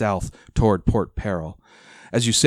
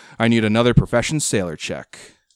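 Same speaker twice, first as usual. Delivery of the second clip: ordinary talk, nothing marked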